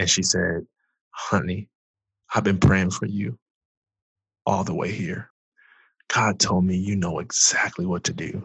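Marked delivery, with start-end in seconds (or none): 1.1-8.5 put-on breathless voice, quieter. Retelling grandmother bursting in after running through the hospital: imitating someone out of breath. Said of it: "out of breath 'cause she ran".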